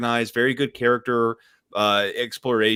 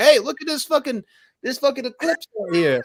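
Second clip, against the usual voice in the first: put-on very high, sloshed, drunken rambling and exclaiming; 13 semitones higher than usual. Retelling what a drunk husband said on the porch: imitating a drunk man. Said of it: "drunk as fuck, and he's like".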